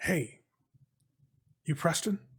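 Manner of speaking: soft, whispered, barely voiced. Narrator voices a figure in a doorway calling out to preston, whispering. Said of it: "you hear a voice whisper out".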